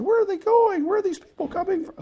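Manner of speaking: very high, fast, squeaky little cartoon voice. Working a velocity problem, speaking for the little Kilroy guy in a Kilroy voice. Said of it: "That's my special voice I shouldn't be using".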